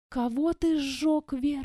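whispered in disbelief. The narrator questions a drunken man after his story, whispering in disbelief. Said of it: "— прошептала я".

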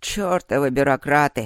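disdainful, scornful, contemptuous. An old man reacts to talk of getting official permission; contemptuous. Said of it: "презрительно высказался дед".

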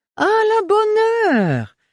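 joyous cry, very high, very slow, swooping. Baron Melchior reacts to the speaker's reassurance, exclaiming joyfully. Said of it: "s'exclama joyeusement le baron Melchior".

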